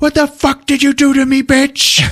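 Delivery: mock very high, shrill, loud shouting. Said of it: "he just yells at her".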